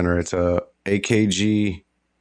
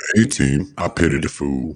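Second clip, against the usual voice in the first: put-on deep, slow, feeble, sad, lame voice; 5 semitones lower than usual. Joking about the A team with a sad Mister T impression. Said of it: "my sad, uh, Mister T impression".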